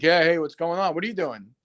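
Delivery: put-on laid-back stoner voice. Retelling finding Steve lounging in pajamas: imitating Steve, laid-back stoner. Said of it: "Is he fucking Dazed and Confused?".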